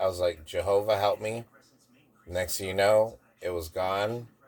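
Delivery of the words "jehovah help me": normal talking voice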